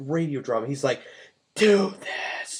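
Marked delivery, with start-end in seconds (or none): 1.6-2.6 eerie, creepy, dramatic whispered voice. Retelling a 1930s radio drama: imitating the Whisperer whispering. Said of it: "whispers the whole fucking time".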